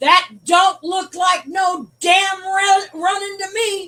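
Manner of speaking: put-on booming voice. Retelling being caught smoking on a break, the speaker quotes someone in a booming voice. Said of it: "comes this booming voice".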